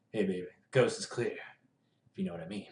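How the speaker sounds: deep voice kept low and soft. Voicing Nico as viewers asked, deep Nico voice. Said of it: "Nico in a deep voice".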